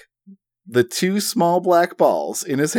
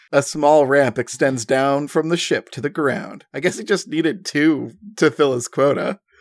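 ordinary delivery

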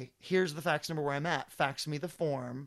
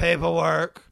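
put-on, very loud, dismissive, can't-be-bothered clerk voice; 2 semitones higher, 9 dB louder than usual. Retelling a clerk's words at a license renewal: imitating an eye-rolling, inattentive clerk. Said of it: "the eye-rolling, ... not at all paying attention to you".

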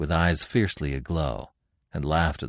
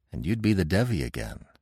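ordinary delivery

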